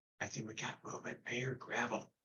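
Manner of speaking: very quiet whispered aside. Warning two party mates about hearing gravel nearby: whispering to party mates. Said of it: "I'll whisper to my two party mates".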